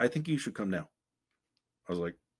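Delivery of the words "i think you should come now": put-on broken English, higher. Retelling a man urging him to come now, imitating broken English. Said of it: "he spoke very broken English".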